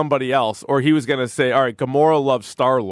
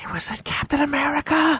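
hushed stage whisper, very high; 14 semitones higher, 4 dB quieter than usual. Retelling what people around them in a packed theater said: imitating people whispering.

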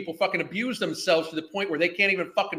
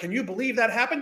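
play-acted, mocking, feigned amazement and disbelief; 4 semitones higher than usual. Mocking a woman in a video, imitating her acting the victim. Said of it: "She's trying to pretend like this".

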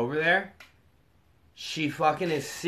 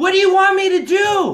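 high, loud exasperated shout. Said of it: "Julie's like".

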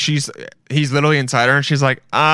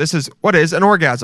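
ordinary talk, nothing marked

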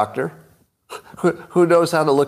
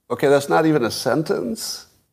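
plain

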